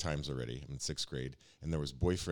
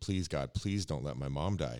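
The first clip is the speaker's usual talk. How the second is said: put-on, desperate, begging, pleading voice. Retelling a childhood prayer beside a bandaged mother in hospital: reenacting begging.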